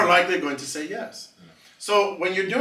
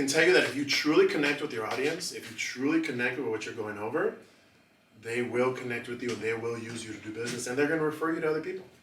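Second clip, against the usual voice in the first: dropped very low, focused tone; 7 semitones lower, 8 dB quieter than usual. Speaker teaching an audience demonstrates a tone shift: lowered, focused tone. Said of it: "Notice my tone when I just said that".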